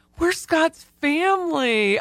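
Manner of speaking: mock high, choked-up voice, catching. Retelling seeing the table placement, imitating own choked-up voice.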